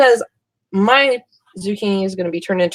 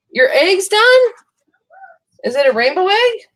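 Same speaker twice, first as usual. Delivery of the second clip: shrill, high, loud yell; 12 semitones higher, 4 dB louder than usual. Calling out to someone in the other room, yelling to another room. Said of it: "I'm yelling at Jolene in the other room".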